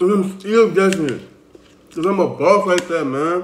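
speaking with mouth full of food. Eating while still guessing the drink for his viewers, talking with mouth full. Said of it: "I'm eating".

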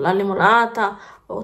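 normal talking voice

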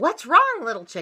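ordinary delivery, nothing marked

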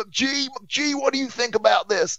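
put-on very high, ranting tirade in American accent. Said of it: "he's ranting in an American accent".

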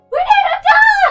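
yelling. Retelling a garage sale quarrel, imitating the mom yelling. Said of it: "the mom is still yelling".

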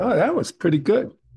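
caught off guard. Reacting right after finishing a breathing exercise; surprised. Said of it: "you sounded surprised at that".

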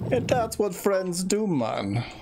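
put-on Jamaican accent, pitched way up. Answering a friend's thanks for saving his life: Jamaican accent. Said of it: "I'm not sure why that was a Jamaican voice".

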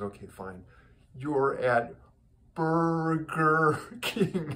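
very slow, deliberate, drawn-out, word-by-word delivery. Retelling a joke where a waitress was asked to say it slowly: imitating someone saying it very slowly. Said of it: "say it very slowly".

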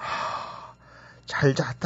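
soft, whispered, nearly lost hoarse voice. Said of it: "내 목소리가 왜 이러지?".

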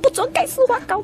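very high-pitched, mock angry yelling outburst.

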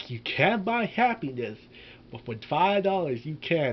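normal talking voice

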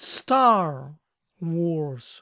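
stress on Star, Wars said lighter. Teaching how to say an English movie title: stress on Star. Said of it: "deben poner la acentuación en la primera palabra".

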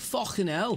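high, loud, strong British accent.

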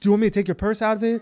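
put-on overly nice tone. Retelling own reassurance to someone about to throw up: imitating own overly nice tone. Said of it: "overcorrect with how nice I'm being".

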